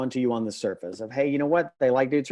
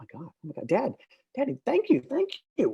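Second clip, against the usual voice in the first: put-on child voice, high, swooping, over-the-moon gushing excitement; 6 semitones higher than usual. Tell a story where the second child sees the pile and thanks his dad, imitating a super excited kid. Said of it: "he gets super excited and goes".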